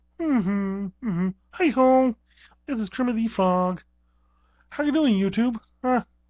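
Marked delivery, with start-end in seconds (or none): 1.5-5.6 very high-pitched, loud, belted-out voice. Bringing a friend up to greet the video viewers: Kermit the Frog voice. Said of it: "I've got a friend with me in the studio".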